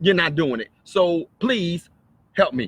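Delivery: upset, emotionally charged delivery. Showing how a request for help sounds: emotional. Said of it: "I'm being emotional".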